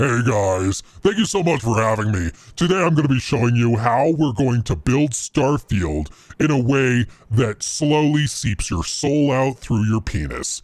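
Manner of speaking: deep, low, devilish demonic voice. Mocking the head of gameplay development as Satan addressing an audience; Satan voice. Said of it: "let me let me do it this way".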